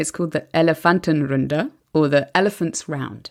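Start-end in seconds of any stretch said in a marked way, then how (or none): 0.0-1.7 German-accented pronunciation. Naming a German election-night TV debate: best German accent. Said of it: "I'm gonna try my best German accent here".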